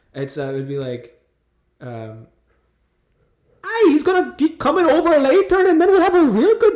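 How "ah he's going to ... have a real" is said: very high, clumsy, put-on bad Irish accent. Told her accent is really bad, speaker tries again: bad Irish accent. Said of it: "whenever I do Irish".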